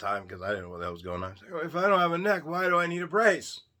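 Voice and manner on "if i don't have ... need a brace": feeble, faint, weak little voice, pitched up. Retelling his reply to a man calling for a neck brace, in a weak voice. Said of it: "in my weak voice".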